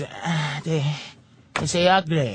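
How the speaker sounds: deep, low voice. Retelling what the store employee said about the upgrade, imitating the employee. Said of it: "I bring it to the Chinese guy. He goes".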